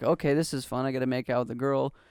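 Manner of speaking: normal talking voice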